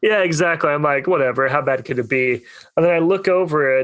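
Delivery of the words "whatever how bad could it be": usual speaking voice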